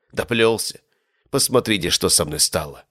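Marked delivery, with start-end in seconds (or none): none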